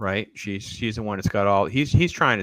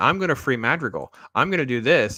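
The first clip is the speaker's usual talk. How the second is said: whiny, swooping, sing-song complaining voice; 4 semitones higher than usual. Imitating a show character who keeps whining: imitating a whining character. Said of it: "she just keeps whining".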